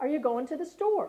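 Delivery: rising question-like lift at the end on "store". Explaining how questions are marked in speech: rising at the end on store. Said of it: "our voice goes up at the end of the sentence".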